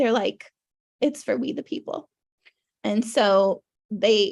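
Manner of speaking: voice welling with feeling. A speaker apologizing to listeners as they start getting emotional. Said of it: "I'm sorry if I'm getting emotional".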